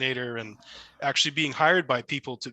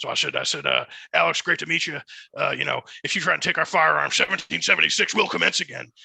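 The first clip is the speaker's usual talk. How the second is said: hoarse, gruff, rough-edged voice; 3 semitones higher, 5 dB louder than usual. Meeting Alex at a signing event and greeting him in an Alex impression. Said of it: "his impression of you".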